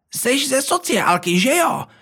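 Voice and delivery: very high, suspicious, accusing voice. One of the characters accuses the narrator in a suspiciously high voice. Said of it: "Obvinila mě jedna z postav naopak až podezřele vysokým hlasem".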